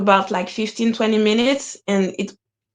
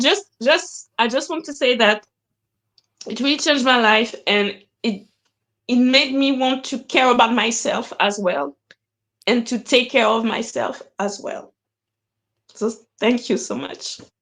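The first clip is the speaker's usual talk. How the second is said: tearful speech, crying. Thanking someone for changing their life, crying while talking. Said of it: "I wasn't planning to".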